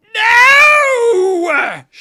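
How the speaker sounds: piercing, very high, very loud shriek. Voicing a character finding an empty sarcophagus: screaming in character. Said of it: "she screams".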